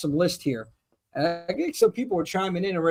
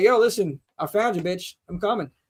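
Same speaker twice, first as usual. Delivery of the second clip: taunting, masked slasher-killer voice. Retelling the film's chase scene, imitating Michael Myers. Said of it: "And he's like".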